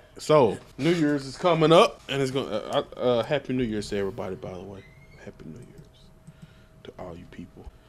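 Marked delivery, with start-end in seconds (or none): 3.3-7.7 hushed, barely voiced whisper, very soft. Back from an ad break, greeting the listeners: whispering. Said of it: "Why are you whispering?".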